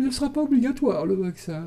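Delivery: high, prim mother superior voice. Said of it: "comme une mère supérieure".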